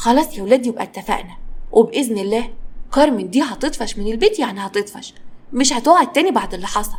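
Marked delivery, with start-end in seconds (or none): none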